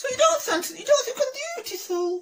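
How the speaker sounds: put-on very high woman's voice. A man performing both sides of a dialogue, doing a woman's voice. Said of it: "try to do a woman's voice".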